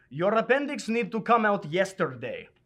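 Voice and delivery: put-on Serbian accent. Retelling what a doctor said at the hospital: imitating a thick Serbian accent. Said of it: "in a very thick Serbian accent".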